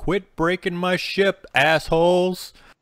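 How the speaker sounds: very loud, very high, shrill, drawn-out top-of-lungs scream. Voicing a character rowing as stones break the deck: screaming at the top of lungs. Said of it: "just scream to the top of his lungs".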